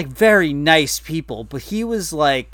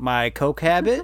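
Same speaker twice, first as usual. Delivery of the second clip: deadpan delivery, dead serious. Retelling an interviewee's reply when asked what he won't discuss, retelling a deadpan joke. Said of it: "but deadpan jokingly".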